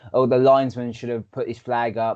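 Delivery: ordinary delivery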